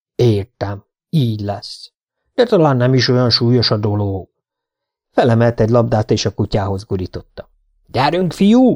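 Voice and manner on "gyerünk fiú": high, rousing, encouraging shout. The dog's owner rolls a ball and calls to the dog, shouting encouragingly. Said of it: "Kiáltotta lelkesítően".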